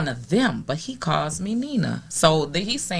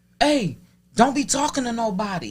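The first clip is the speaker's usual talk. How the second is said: higher-pitched, stern put-on voice. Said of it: "He was like".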